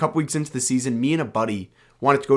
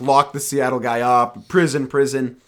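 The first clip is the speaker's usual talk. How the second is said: ordinary talk, nothing marked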